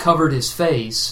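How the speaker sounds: ordinary delivery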